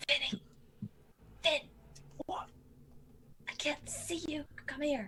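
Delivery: loud, high-pitched, carrying stage whisper. Calling for Finn from the far back, in a loud whisper. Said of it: "I'm whispering loudly".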